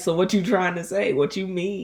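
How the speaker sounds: put-on offended reaction. Retelling how partners react to the word current: imitating a triggered reaction. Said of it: "immediately it triggers people".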